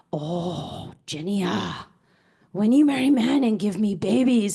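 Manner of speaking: thick, heavy put-on Korean accent. Speaker quotes what their mother said for years, imitating her strong Korean accent. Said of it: "who has a very Korean accent".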